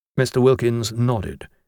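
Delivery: ordinary delivery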